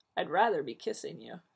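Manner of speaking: plain reading voice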